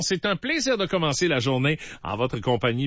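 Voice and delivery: ordinary talk, nothing marked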